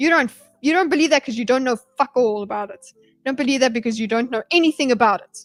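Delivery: play-acted, angry snapping, barely held-together fury. Retelling a debater's reply that snaps at the other, imitating an angry snap. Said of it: "He's so angry".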